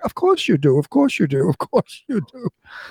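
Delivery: swooping, pitch-swinging Hollywood star voice. Retelling Bette Davis answering adoring fans in a restaurant: Bette Davis voice. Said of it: "with that Bette Davis voice".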